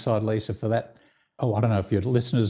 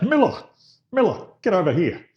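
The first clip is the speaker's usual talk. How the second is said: high, loud shout with swooping pitch; 9 semitones higher, 4 dB louder than usual. Retelling an actor calling out during the ad breaks: imitating Robert Taylor shouting. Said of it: "he shouts out".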